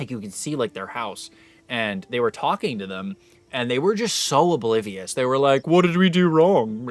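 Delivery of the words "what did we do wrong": raised, drawn-out rich guy voice.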